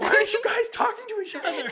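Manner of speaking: very loud, very high yelling. Speaker reminds the listener how the listener once yelled at them, retelling a yell. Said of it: "you remember you like yelling at me".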